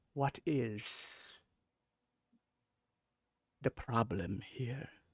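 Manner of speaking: echoey, soft, slow, angelic, otherworldly celestial voice. Voicing a character in a storytelling scene as she asks a question, celestial angelic voice. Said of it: "in kind of like a celestial angelic voice, almost echoey".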